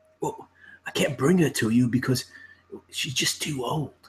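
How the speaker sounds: whispered line. Voicing a man who leans in closer: whispering NPC. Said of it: "He's whispering and he's kinda".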